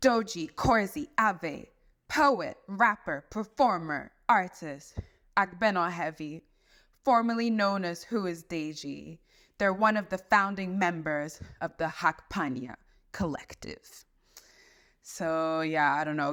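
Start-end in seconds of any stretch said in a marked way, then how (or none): 0.0-14.0 acted dramatic TV voice. Reading a guest's bio aloud as requested, in a Game of Thrones voice. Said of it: "requested to read in a Game of Thrones voice".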